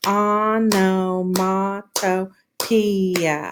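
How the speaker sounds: very slow, clapped out syllable by syllable. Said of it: "let's clap this one out".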